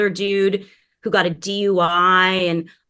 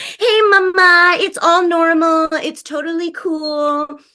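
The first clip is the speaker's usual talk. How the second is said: put-on very high, slow baby talk; 9 semitones higher, 4 dB louder than usual. Retelling how nurses spoke to a weeping patient: imitating nurses' baby talk. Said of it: "trying to treat me like".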